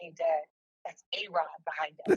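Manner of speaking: whispered. Seated beside dad in assigned seats, the speaker retells a whisper. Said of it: "I whisper to my dad and I'm like".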